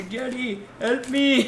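put-on Pakistani-accented voice. Speaker quotes a character being deported calling to jerry, in a put-on accent. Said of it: "Why did you do the accent?".

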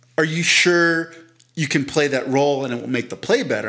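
ordinary talk

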